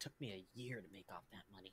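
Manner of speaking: very quiet, low mutter under the breath. Voicing a character whom the players hear: mumbling under his breath. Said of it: "you hear him mumble under his breath".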